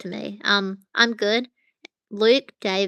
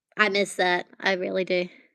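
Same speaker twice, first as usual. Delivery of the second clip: ordinary talk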